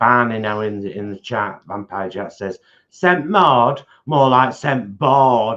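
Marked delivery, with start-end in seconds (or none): 2.9-5.6 put-on loud, slow, shouted Yorkshire accent. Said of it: "in capitals with a Yorkshire accent".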